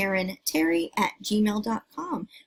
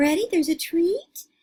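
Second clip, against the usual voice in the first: put-on high-pitched teasing little-girl voice; 8 semitones higher than usual. Watching a dog wanting a treat, voicing the little girl teasing him. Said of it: "she's like teasing him".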